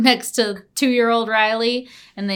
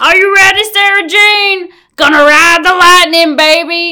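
rowdy, high, loud hooligan yell; 8 semitones higher, 8 dB louder than usual. Recapping an episode, the speaker acts out Jacob's line, retelling Jacob's hooligan shout. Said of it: "She hears Jacob shouting like a hooligan".

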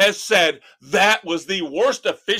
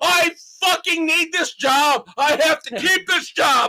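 put-on screaming coach voice, higher; 9 semitones higher than usual. Imagining a coach in the officials' faces: imitating Matt Nagy screaming. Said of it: "in the officials' faces screaming and yelling".

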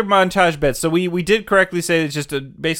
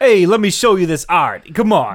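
put-on New York street guy voice; 4 dB louder than usual. Imitating an actor's street guy accent from the movie: imitating Ted Danson's street guy voice. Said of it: "more like a street guy, like, voice that he's doing".

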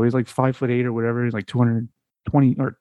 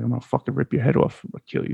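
breathy, whispered, menacing tone; 4 dB quieter than usual. Retelling what a killer told an interviewer: imitating Kemper threatening. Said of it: "Kemper's sitting there telling him, he's like".

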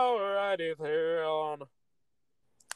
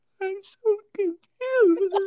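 very high, slow mock sobbing wail. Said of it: "your crying voice".

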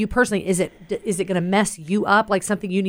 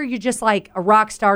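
ordinary delivery

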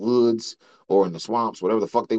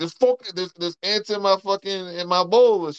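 mock yelling, much higher pitch, slower pace; 9 semitones higher than usual. Retelling a story about a Jamaican guy, imitating him yelling. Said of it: "He just started yelling a bunch of crazy shit".

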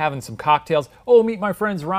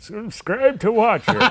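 put-on old man voice, higher; 5 semitones higher than usual. Joking about a speaker inside the other's body at a funeral: imitating an old man voice. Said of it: "with your old man voice saying".

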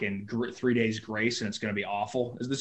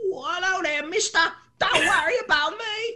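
put-on Cockney boy voice, much higher; 5 dB louder than usual. Speaker voicing an imaginary little Cockney boy sidekick: Cockney John voice. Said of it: "the little Cockney boy".

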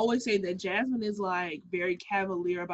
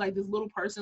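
ordinary talk

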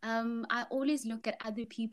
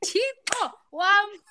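mock scream, much higher, louder; 10 semitones higher, 12 dB louder than usual. Retelling being at the airport and calling out to Chipo: retelling a scream. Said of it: "I'm like screaming".

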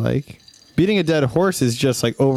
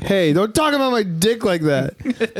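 acted, very angry voice, higher; 8 semitones higher than usual. Acting out an imagined argument on the show: acting really mad. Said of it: "really mad right there".

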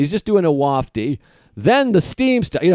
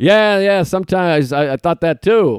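put-on fumbling, fumbled reply. Retelling own awkward reply to a stranger: imitating own fumbling reply. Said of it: "Just kinda, like, fumbling".

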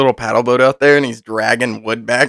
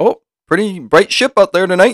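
bad put-on Canadian accent, higher; 6 semitones higher than usual. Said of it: "I'm not good at accents".

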